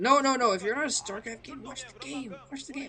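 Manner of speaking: high-pitched mock-stern scolding tone.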